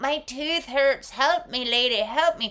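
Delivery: pained, hurting, pleading lion voice. Voicing the lion asking the woman for help: voicing a hurting lion. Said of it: "And the lion's like".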